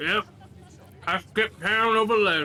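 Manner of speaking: muffled through food. A character answers the player, talking with a mouthful of food. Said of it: "actual lore accurate mouthful of food".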